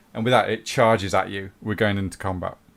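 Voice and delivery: ordinary talk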